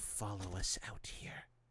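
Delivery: speaking quietly. The chief questions Shuka, no longer in her harsh whisper, keeping her voice down. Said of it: "her voice down".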